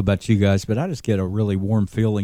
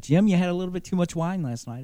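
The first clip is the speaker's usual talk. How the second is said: wimpy, pitched-up, high voice; 9 semitones higher than usual. Describing a boot camp video, the speaker quotes Jesus addressing a disciple, wimpy Jesus voice. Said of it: "in this wimpy voice".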